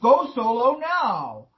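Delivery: thundering spirit voice. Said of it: "always get this thundery voice comes in".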